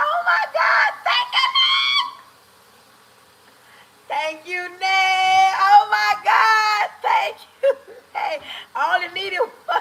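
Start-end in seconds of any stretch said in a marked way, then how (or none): 0.0-8.4 ecstatic excited yell, high and swooping. Speaker thanks ned after being given the crown, excited yelling. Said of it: "why I just yelled like that".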